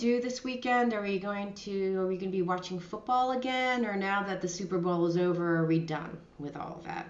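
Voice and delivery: snide, passive-aggressive, veiled nastiness under false sweetness. Showing how a mate can tell you're being nasty, passive-aggressive nasty. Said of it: "I'm going to be passive aggressive nasty now".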